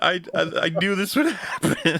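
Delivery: high-pitched fake blubbering sobs, stammered. Imagining Cherry bursting in on Matt: Cherry mock crying.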